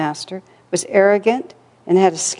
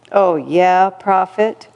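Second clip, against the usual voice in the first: said with a sneer. Reading a story aloud, voicing a man's reply to the narrator: sneering. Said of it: "he sneered".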